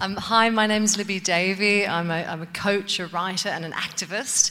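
loud voice.

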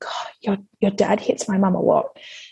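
hushed whisper. Retelling what they whispered to his son while drying dishes, retelling a whisper. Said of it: "I whispered to him".

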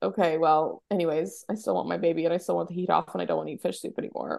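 ordinary talk, nothing marked

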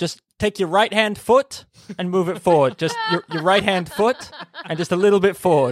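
acted-out, high, insistent yelling, over and over. Speaker retells a man instructing someone on a tree, imitating someone yelling. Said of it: "And he kept yelling".

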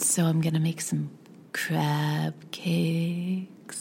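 put-on sultry slow voice. Describing a man on a TV show to a friend, imitating a slow sensual talker. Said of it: "he literally talks like this".

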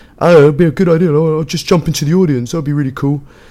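eager, high, loud voice.

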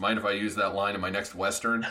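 plain

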